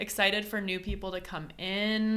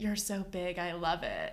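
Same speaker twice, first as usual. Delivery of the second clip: put-on whispered voice; 3 dB quieter than usual. Retelling what someone said in bed, imitating a whisper. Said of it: "whispered to him saying".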